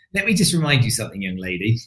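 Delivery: acted-out condescending, patronizing, talking-down tone. Retelling a reply to a woman who wanted someone worthy: retelling own condescending tone. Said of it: "my kind of condescending, patronizing mode".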